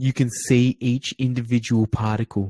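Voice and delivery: soft whisper close to the mic. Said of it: "get really close to the microphone and just whisper".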